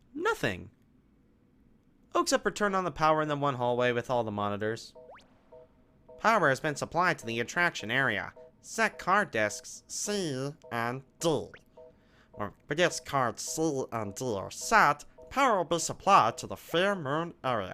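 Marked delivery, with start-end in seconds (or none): 6.2-17.8 silly cartoon voice, slow and drawn out. Reading out power instructions aloud, in a stupid Stitch voice. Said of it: "saying it in that stupid Stitch voice".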